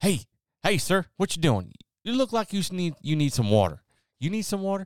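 basic Southern dad voice, very high-pitched. Describing how a basic Southern dad talks to strangers, Southern dad voice. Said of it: "Basic Southern dad".

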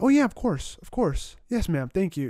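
put-on polite phone voice. Showing the voice everyone uses on the phone, in a put-on polite phone voice. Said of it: "everyone has that on the phone voice".

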